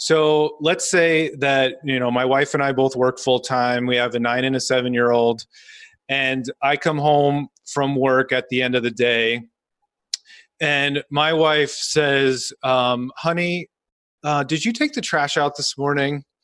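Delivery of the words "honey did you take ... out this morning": mock pleasant, kind, friendly tone. Retelling his wife asking him a question when he gets home, imitating a nice tone. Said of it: "I intentionally said that in a nice way".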